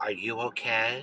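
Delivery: low, hushed voice, almost a half-whisper. Retelling a man who walked over with his two kids asking, lowered near-half-whisper. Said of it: "he kind of lowers his voice like he's whispering almost".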